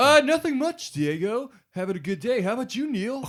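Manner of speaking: put-on skater dude voice, very high. Restarting the conversation after being asked to be fake: put-on skater voice. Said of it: "He just went skater".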